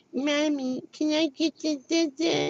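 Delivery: put-on soft, very high, childish baby talk. A mother imitating how children speak when raised on baby talk. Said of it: "when you do baby talk, they're just going to be like".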